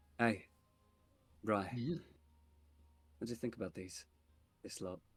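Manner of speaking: whispering in a character voice. Leaning close to another character and asking his opinion: whispering in character. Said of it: "I'll whisper".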